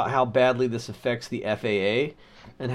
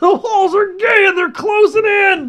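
put-on screaming rant voice, higher and louder; 12 dB louder than usual. Imagining going full Alex Jones: screaming Alex Jones impression.

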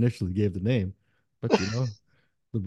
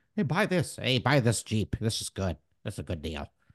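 coaxing, salesy pitch voice; 3 dB quieter than usual. Retelling their brother's words, imitating the brother's voice. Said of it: "I love it when you do this voice".

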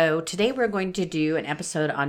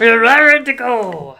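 odd, weird put-on voice, high and very loud; 6 semitones higher, 13 dB louder than usual. Repeating the other speaker's words to liven things up: put-on weird voice. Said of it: "I was just doing a weird voice".

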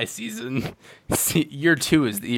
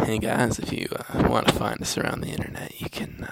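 put-on creepy, eerie voice; 5 semitones lower, 7 dB quieter than usual. Doing this week's shtick for the sign-off plug, in a creepy voice. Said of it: "It's a very creepy voice".

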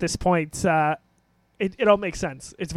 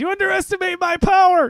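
put-on scream, much higher, louder; 13 semitones higher, 6 dB louder than usual. Describing a game character's glitch, imitating how he automatically screams. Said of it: "he automatically just screams".

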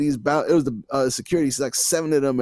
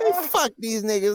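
badly put-on lisping boxer voice, higher-pitched; 8 semitones higher than usual. Retelling a story, quoting a line in a terrible Mike Tyson accent. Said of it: "my terrible Mike Tyson accent".

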